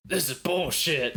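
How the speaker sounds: play-acted rebellious teenager's yelling outburst. Imagining a teenage rebellion at the dinner table: Lore yelling. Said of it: "Lore just yelling".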